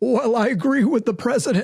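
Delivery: high, mean, unkind mocking put-on voice. Quoting a man's answer, doing his voice: imitating his voice. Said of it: "I can't help but do the voice".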